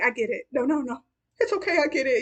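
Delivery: put-on tearful voice. Speaker retells a scene where Carrie left Charlotte out, imitating Charlotte crying. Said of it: "she gets all emotional and starts to cry".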